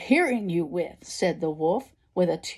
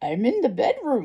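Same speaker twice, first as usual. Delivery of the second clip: odd, wavering, wobbly storybook wolf voice; 4 semitones higher than usual. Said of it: "replied the wolf in a strange, wobbly voice".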